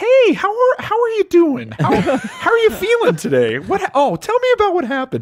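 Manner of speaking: squeaky, very high sing-song voice throughout. Retelling walking into someone's room to greet them, in a high squeaky voice. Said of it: "I just go into like high squeaky voice the whole time".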